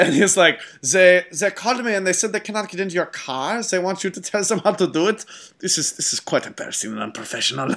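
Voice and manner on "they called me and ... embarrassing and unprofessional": ridiculous over-the-top fake German accent. Quoting an actor's assassin character from a movie, ridiculous German accent. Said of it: "ridiculous German accent".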